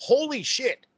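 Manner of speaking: mock, put-on very high squeal. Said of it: "I still scream".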